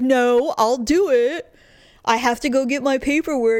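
mocking, put-on imitated voice. Retelling her husband's refusal, imitating her husband's voice mockingly. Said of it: "he hates it when I talk like that".

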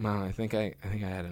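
hushed, low, very quiet half-whisper. Retelling half-whispering to mom back at the hotel, retelling a half-whisper. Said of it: "I like whispered to my".

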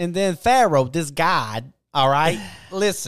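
heavy put-on New Jersey accent. Imitating the man they've been listening to, in a heavy New Jersey accent. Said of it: "You don't sound like from Boston".

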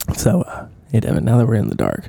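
soft, low, hushed asmr voice. Host addressing a co-host before a sponsor bit, soft ASMR-style voice. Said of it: "We don't need to make this ASMR".

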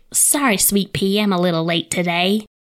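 put-on really broad, thick Southern American accent, friendly. Retelling what an old man at work said: imitating a Southern accent. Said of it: "really southern".

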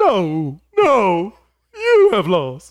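booming, swooping, slow, drawn-out delivery. Playing a Star Wars villain as a joke, sounding like Christopher Walken. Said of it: "you sounded like Christopher Walken".

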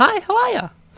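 loud, very high-pitched little game-character voice.

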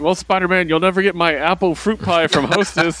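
cheesy, high-pitched, corny comic-book villain voice. Retelling a cheesy comic ad scene: Doctor Octopus voice. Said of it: "Doctor Octopus being like".

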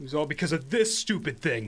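high, swooping, whiny sulk like a simpleton. Voicing Durf, left behind by his party, answering a player: whiny, sulky Durf voice.

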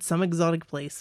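ordinary delivery

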